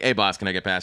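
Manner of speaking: ordinary talk, nothing marked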